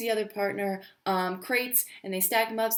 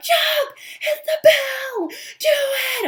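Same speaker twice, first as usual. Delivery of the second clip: very slow, very high, shrill, booming, drawn-out screams; 8 dB louder than usual. Retelling the moment of cheering at the TV: retelling own screaming. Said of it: "And I'm screaming, and I'm like".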